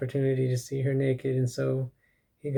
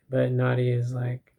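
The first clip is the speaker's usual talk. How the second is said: ordinary delivery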